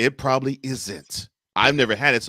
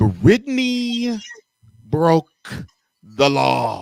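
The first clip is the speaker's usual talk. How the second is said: said really slowly, spelled out, much louder; 5 semitones higher, 5 dB louder than usual. Repeating the point for a listener who might not grasp it, said really slowly. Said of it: "I'm going to say it really slowly".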